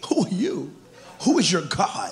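mock scoffing with amusement. Retelling how Pharaoh answered Moses, imitating Pharaoh chuckling.

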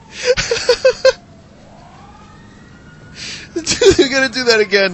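high, loud laughing fit while talking.

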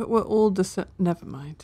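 soft, mumbled mutter under the breath. Player in a tabletop game, reacting under their breath to another character: muttering under breath. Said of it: "and like under my breath".

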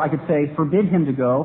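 normal talking voice

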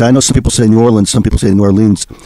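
plain

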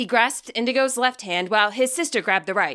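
ordinary delivery

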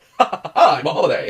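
smug, self-satisfied, chuckling boastful tone. Describing a dry dad in a ring with a drink: imitating a smug dad. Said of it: "he's just like".

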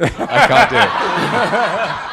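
high, loud, drawn-out voice while laughing.

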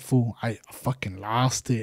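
put-on very quiet, slow voice, angry and deeply sad. Retelling what an upset friend said after losing something: imitating someone mad and sad. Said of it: "He was so fucking mad and sad".

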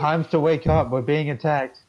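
declared in an announcer-style voice. A character magically amplifies his voice to raise the alarm, booming loud voice. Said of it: "make my voice boom 3 times as loud as normal".

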